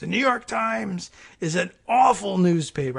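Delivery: rough, raspy ranting voice. Imitating a caller who would rant about a newspaper: Armando's raspy voice. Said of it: "in his raspy voice".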